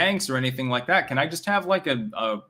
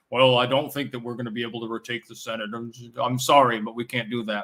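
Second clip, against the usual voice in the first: put-on deep, turtle-like voice; 3 semitones lower than usual. Showing how a man with the perfect voice for his looks talks, imitating a deep, turtleish voice. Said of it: "He's got a deep sort of a turtleish voice".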